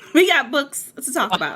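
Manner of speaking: loud, stressed shouting. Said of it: "why you yelling".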